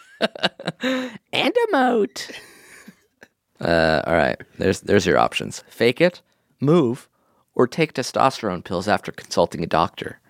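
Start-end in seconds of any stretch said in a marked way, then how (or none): 1.4-2.3 tiny, high, squeaky horse voice. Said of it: "So he'd be like".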